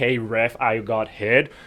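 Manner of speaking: very slow, milked, oversold complaining delivery. Imitating players selling a high stick to the referee: imitating a player appealing to the ref. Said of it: "I know they need to be like".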